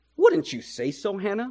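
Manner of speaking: mocking, very snarky, snide and sarcastic. Narrator reads a character's question to a woman who has no children, very snarky. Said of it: "saying it very snarkly".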